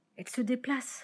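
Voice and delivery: murmured softly. Reading a story aloud, the narrator voices Frolin watching the thing: murmured. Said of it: "murmura Frolin".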